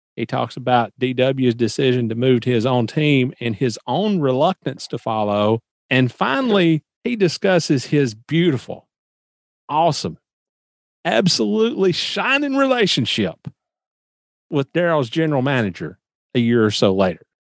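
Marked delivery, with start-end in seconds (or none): 7.0-17.2 sing-song, pitched-up, overdone sarcastic praise. Previewing an interview segment to a co-host, sarcastic. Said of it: "Being a little sarcastic about that one".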